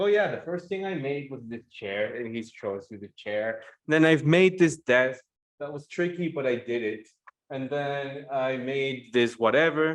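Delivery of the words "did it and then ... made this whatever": ordinary talk, nothing marked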